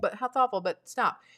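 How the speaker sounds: ordinary delivery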